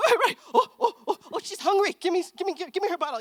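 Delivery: mock very high, excited, rushed, flustered grandmother voice. Speaker retells her mom with the hungry baby: imitating mom's flustered excitement. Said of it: "and then my mom would be like".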